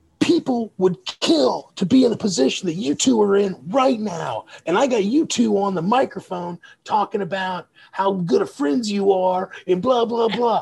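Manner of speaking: full-on screaming. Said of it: "he's screaming at us".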